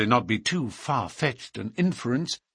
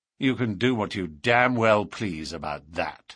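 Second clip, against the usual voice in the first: defiant tone; 5 semitones lower than usual. Narrator reads Barker answering the inspector, defiant. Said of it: "said Barker defiantly".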